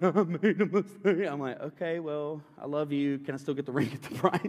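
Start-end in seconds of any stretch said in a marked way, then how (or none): 0.0-1.3 slow, weepy, tearful, drawn-out voice. Recounting what she said on his return from the bank, imitating her crying. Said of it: "she's like in tears".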